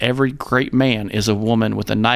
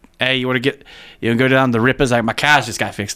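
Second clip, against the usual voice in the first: casual, put-on Boston accent; 2 semitones higher than usual. Showing how someone with a Boston accent sounds, in a put-on Boston accent. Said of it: "If you hear someone with a like a Boston accent".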